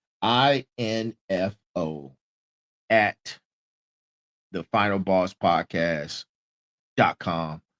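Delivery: very low, deliberately slowed, broken-up delivery. Podcast host spelling out the show's email address again, now slowing down. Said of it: "Let me slow down".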